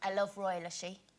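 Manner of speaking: imitated Irish accent. Quoting an ex-mother-in-law's words, in an irish accent. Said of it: "that's why I'm doing an Irish accent".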